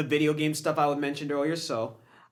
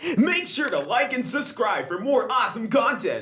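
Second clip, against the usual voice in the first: hammed-up, bouncy, pitched-up YouTuber voice; 7 semitones higher than usual. Asking for likes and subscriptions as modern YouTubers do, in an exaggerated YouTuber voice. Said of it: "I can even do the exaggerated voice too".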